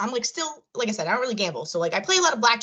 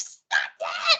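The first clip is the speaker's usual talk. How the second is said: mock, toned-down, excited freaking-out scream. Retelling a big casino win, the speaker acts out their own screaming. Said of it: "Like I was like screaming".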